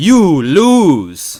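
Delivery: very loud, high fighting-game announcer, "lose" stretched. Celebrating a checkmate: bad Street Fighter imitation. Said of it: "my bad imitation of, uh, Street Fighter".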